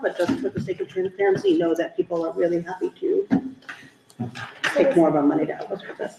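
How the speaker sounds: rushed, rattled-off words tumbling out nonstop. Speaker addressing everybody in the audience, talking very fast. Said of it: "You're talking so fast".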